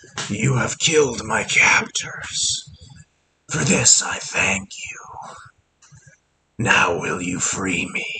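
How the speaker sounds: low, deep, rasping whispered voice. A game master voices a glowing deer skull speaking to the players, deep, raspy voice. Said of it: "you hear a deep, raspy voice in your head".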